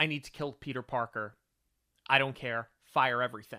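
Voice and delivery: normal talking voice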